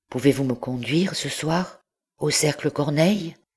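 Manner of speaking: voice choked up, strangled. Narrator voicing a young man asking his companion a question, strangled voice. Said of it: "d'une voix étranglée".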